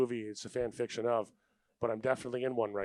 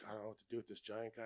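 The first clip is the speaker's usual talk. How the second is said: imitated nervous voice, quieter; 14 dB quieter than usual. Retelling what a police officer said: imitating a nervous police officer. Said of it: "He got so nervous".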